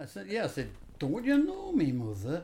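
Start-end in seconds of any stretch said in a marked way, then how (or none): 1.0-2.4 put-on northern English accent. Retelling what you once said to your mother, in a northern accent. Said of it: "I just spoke northern".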